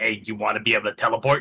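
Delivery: plain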